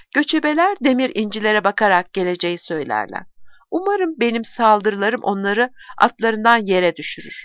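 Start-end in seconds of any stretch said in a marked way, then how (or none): none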